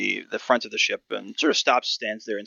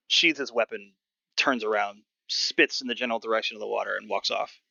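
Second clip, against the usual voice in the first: ordinary delivery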